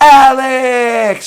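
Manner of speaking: high, loud, carrying shout.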